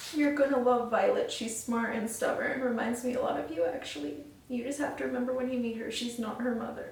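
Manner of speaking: soft, tearful, crying while reading aloud. Reading a book to viewers and telling them about a character, crying while talking. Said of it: "I don't know why I'm crying at that".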